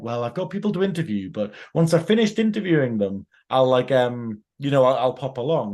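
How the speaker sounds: ordinary talk, nothing marked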